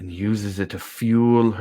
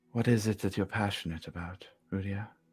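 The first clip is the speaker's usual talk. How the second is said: very soft, gentle, soothing, reassuring voice; 8 dB quieter than usual. Describing the reply Udia gets, then voicing it: very soft, comforting voice. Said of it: "the response is a very soft voice, very comforting".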